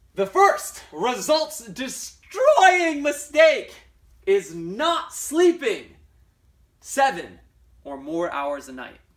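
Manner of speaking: very loud, slow, halting, passionate emphasis. Presenting number one on a list of mistakes, slowed down with lots of passion. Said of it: "I'm going to say it like with a lot of passion, and I'm going to say it like slowed down a little bit".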